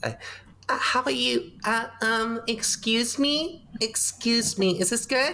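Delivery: very high, drawn-out put-on Valley girl voice. Doing a best-effort Lisa voice for the audience, Lisa voice. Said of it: "Let me just do my best Lisa voice".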